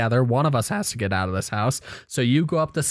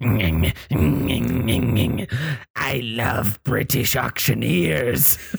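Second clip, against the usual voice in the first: rough, creaky, rasping creature voice, croaked out. Game master voicing a three-legged creature speaking to the players: Enfield Horror creature voice. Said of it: "It says to you".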